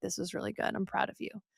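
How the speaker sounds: very quiet, hushed, barely voiced leaned-in whisper. Retelling what he whispered after a seventh-grade class reading, imitating a whisper. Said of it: "he literally like leaned down and whispered".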